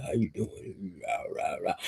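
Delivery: whispered, hushed, breathy big-man voice, not squeaky. Imagining how a big man in the background would speak: imitating a big man's voice. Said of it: "you too big to have a squeaky voice".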